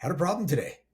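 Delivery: put-on cheerful tone. Retelling what a caller said on the phone: imitating someone sounding happy. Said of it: "Why do you sound so happy about it?".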